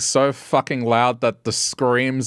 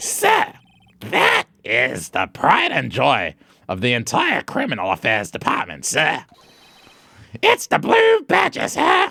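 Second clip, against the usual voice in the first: rasping, scratchy put-on character voice. Voicing a character's lines while playing through a trial scene: scratchy voice. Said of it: "when I do this scratchy voice".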